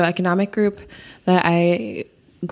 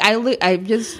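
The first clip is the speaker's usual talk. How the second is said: ordinary delivery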